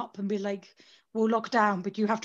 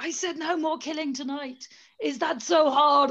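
high, put-on screaming; 5 semitones higher than usual. Retelling a film scene where a character screams at her neighbour: imitating a scream. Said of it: "just screams at her like".

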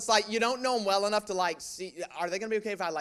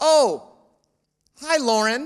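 very loud, high, sarcastically bright and cheery; 6 semitones higher, 11 dB louder than usual. Retelling how callers mistook him for his sister: sarcastic imitation of a caller. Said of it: "I'm loading on the sarcasm on that one".

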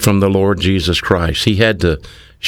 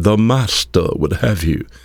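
imitated English accent. Quoting smooth-sounding preachers from England, in an English accent. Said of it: "had an English accent and spoke a bit like this".

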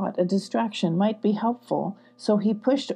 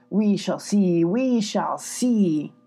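low grunting voice, words pushed out with a grunt. Reading a story, another voice answers the first speaker, grunted. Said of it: "Another voice grunted".

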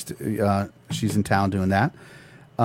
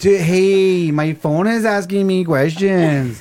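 put-on stoned voice, much higher pitch, louder; 9 semitones higher, 5 dB louder than usual. Hosts imagine a stoned listener answering their phone call: imitating a stoned voice. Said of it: "I love it in a stoned voice".

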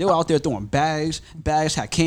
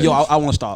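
plain

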